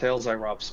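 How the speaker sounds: ordinary talk, nothing marked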